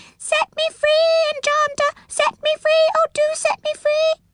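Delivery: very high, small, pleading squeal. Narrator voices Mr. Changeabout calling to the enchanter from a kettle, small squealing voice. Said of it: "a small, squealing voice".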